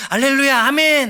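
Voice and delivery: high, loud, joyful shouting. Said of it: "그것을 기쁨으로 받습니다".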